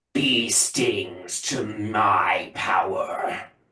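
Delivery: loud draconic voice. A player's character in a tabletop game speaks in a loud draconic voice. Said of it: "loudly in his draconic voice".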